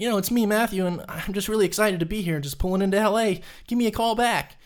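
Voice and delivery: put-on very high, young, just-past-puberty voice. Retelling a voicemail left at twenty-two: imitating his younger self at twenty-two. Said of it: "You sound a lot different".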